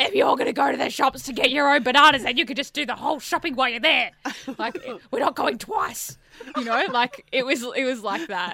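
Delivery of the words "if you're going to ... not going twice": loud, put-on demon voice. Retelling her own snappy remark to him: demon voice. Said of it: "It was a demon voice".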